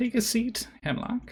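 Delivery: very high, crackly crone voice like dry weeds. Voicing an old lady in a tent greeting arrivals: crackling old woman voice. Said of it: "her voice crackles like dry weeds".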